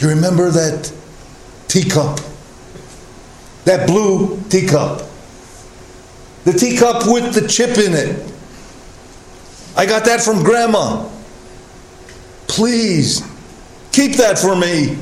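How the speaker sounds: stage whisper in a dying, pleading voice. A dying loved one summons you and asks a last favor; dying whisper. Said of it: "in a dying whisper".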